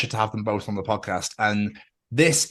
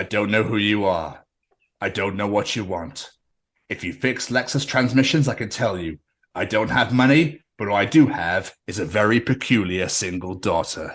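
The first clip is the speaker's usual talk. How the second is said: put-on menacing movie voice, lower; 3 semitones lower than usual. Imitating a listener's dad as the opposite of Liam Neeson: mock Liam Neeson Taken speech. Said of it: "He's got the opposite of Liam Neeson".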